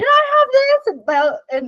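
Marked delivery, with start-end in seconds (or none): 0.0-0.9 mock shrill child screaming, very high. Retelling a child grabbing candy in line, imitating Alec screaming. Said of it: "And he's like screaming".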